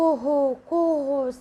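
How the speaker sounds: high, loud rooster crowing call. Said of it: "said the cock".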